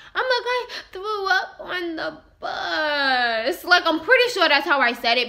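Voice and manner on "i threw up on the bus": weepy, tearful, very slow crying, "bus" dragged out. Retelling telling a parent about throwing up: imitating own past crying. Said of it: "Picture me saying it like that, but tears pouring down my face".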